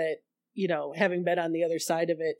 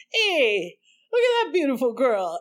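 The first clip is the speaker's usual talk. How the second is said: put-on brash tough-guy voice, higher and louder; 8 semitones higher, 6 dB louder than usual. Imitating a neighbor who called out from his stoop: imitating Bobby doing Andrew Dice Clay. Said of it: "kinda doing, like, a Andrew Dice Clay impression almost".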